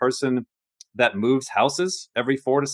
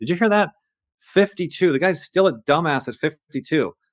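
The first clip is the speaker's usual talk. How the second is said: emphatic, yelling rant; 4 semitones higher than usual. Retelling reacting to a video on a man, imitating own yelling. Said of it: "yelling at the camera".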